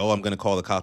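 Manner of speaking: ordinary talk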